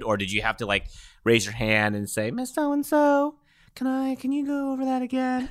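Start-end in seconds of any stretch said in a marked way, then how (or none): 2.3-5.5 put-on slow, very high childlike tone. Acting out a student asking the teacher to repeat: Little Bo Peep voice. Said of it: "you sound like Lil Bo Peep".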